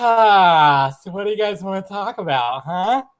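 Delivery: leaning-back lazy casualness, slow, drawn-out "ah". Joking about slowing down to take a breather: pretend relaxed, laid-back. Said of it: "Just lean back in the chair and be like".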